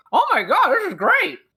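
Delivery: very high, thrilled, delighted gushing exclamation. Describing a character tasting the food: acting delighted after tasting. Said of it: "take a bite and go".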